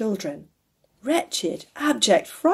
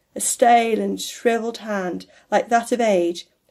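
plain reading voice

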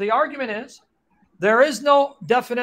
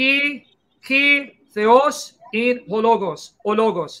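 Greek accent, slower. Reading a Greek phrase aloud on a live stream: Greek accent. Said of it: "Trying to sound like a Greek".

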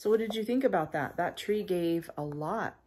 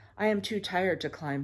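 plain reading voice

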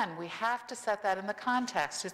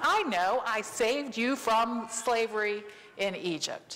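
very slow, drawn-out, lightly sarcastic delivery. Voicing god's words to his people in a sermon: sarcastic. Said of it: "God's being a little sarcastic here".

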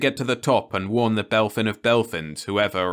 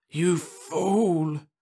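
gasped out, short of breath, pitched-up cry; 8 semitones higher than usual. Narrator reads a dying alien entity's words to the one who destroyed it; gasping. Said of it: "it gasped".

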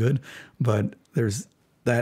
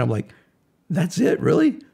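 ordinary talk

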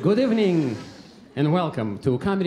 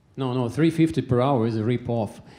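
plain

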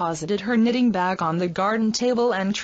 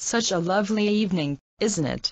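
ordinary delivery, nothing marked

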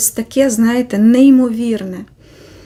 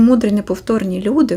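normal talking voice

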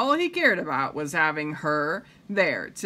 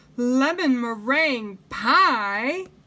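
delighted, excited, pitched-up cry, "pie" drawn out; 7 semitones higher, 3 dB louder than usual. The narrator reads Mrs. Rogers tasting Amelia Bedelia's surprise pie, exclaiming. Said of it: "she exclaimed".

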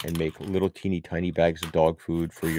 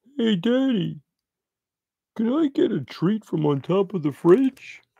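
very high, slow, drawn-out pretend dog voice; 3 dB louder than usual. Owner telling about his dog at the fridge, voicing the dog. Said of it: "me pretending it's her talking".

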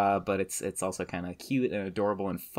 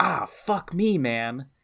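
loud, pitched-up, very slow dorky outburst; 7 semitones higher, 4 dB louder than usual. Retelling a player's curse after being hit by a pitch: imitating a loud curse. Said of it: "really, really loudly on the broadcast".

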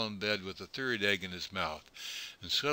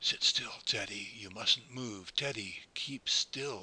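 hushed, slow whisper. A father speaks to his son teddy, who must keep still; whispered. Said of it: "all his father could do was whisper".

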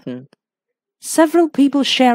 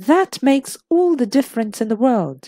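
ordinary delivery

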